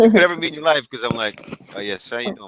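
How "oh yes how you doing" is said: deep, hushed, very low, smooth sales voice. Showing how they sound pitching someone on the phone: smooth voice ten notches lower. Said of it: "my voice goes, like, ten notches lower".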